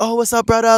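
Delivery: easygoing, friendly, high-pitched local Hawaiian pidgin. Retelling a phone call with a local guy on the island: imitating local pidgin speaker. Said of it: "he's speaking pidgin".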